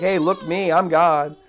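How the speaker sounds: mock pompous, arrogant pride. Imitating the king showing off before the crowd: imitating pompous pride. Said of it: "he's like".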